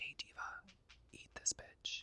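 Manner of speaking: put-on whispering. Retelling a story, one figure tempting her to eat: acted whisper in her ear. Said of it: "he is whispering in her ear".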